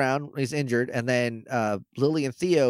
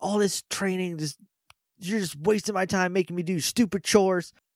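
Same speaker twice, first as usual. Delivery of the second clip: mock frustrated, high, angry yell; 6 semitones higher than usual. Retelling how a character stormed in at another: imitating someone yelling. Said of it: "yelling at R J".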